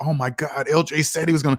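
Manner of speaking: mock stunned, amazed realization. Retelling how someone reacts when a prediction comes true: imitating a stunned revelation. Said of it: "you can hear it in his voice. It's like it's a revelation".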